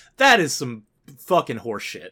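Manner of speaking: really angry, heated, fuming outburst. Ranting to another speaker, then apologizing for being mad: angry. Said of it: "Sorry, Asa, I'm mad now".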